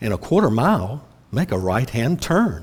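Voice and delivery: confident, self-assured, navigation-announcer-style voice. Imitating spoken GPS directions, imitating a confident GPS voice. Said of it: "it's such a confident voice".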